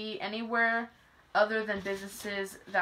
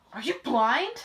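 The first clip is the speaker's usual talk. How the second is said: mock, very exasperated, fed-up delivery; 3 semitones higher, 4 dB louder than usual. Retelling a stranger's question in a checkout line: imitating someone exasperated. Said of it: "But just so exasperated".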